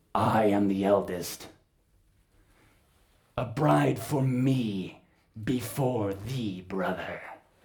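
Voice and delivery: deep, gravelly, rough rumbling monster voice, "me" stretched. Narrating a story, a sky-sized serpent from the lake speaks: deep, gravelly serpent voice. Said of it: "with a deep, gravelly voice".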